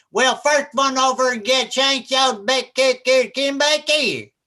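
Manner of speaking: heavy Kentucky country drawl, thick and very slow. Speaker recalls a kid at the grandfather's farm in Kentucky, thick Southern accent. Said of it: "I can't stand thick Southern accents".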